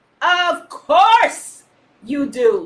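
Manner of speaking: big, loud, booming voice. Retelling a story, answering those he summoned; booming voice. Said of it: "he booms".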